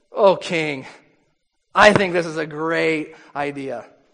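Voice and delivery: dry, mocking, slow sarcastic drawl. Retelling a story, the speaker quotes a man answering the king: retold sarcastic remark. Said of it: "sarcastically says".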